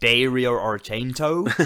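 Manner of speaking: poor put-on American accent. Pronouncing the Suspiria director's name like America, bad American accent. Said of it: "that was a very bad American accent".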